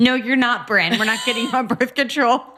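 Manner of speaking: high, motherly voice, refusing tone. Retelling what mom said to the older sister: imitating mom refusing. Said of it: "my mom would be like".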